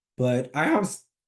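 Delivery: breaking voice, cracking mid-phrase. Explaining their situation in a video, the speaker talks with voice cracking. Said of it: "voice crack".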